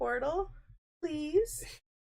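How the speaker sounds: tiny, sweet, very high little voice. Speaker retells what Kirby says when Trevor looks at the Switch, imitating Kirby's sweet little voice. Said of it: "His sweet little voice".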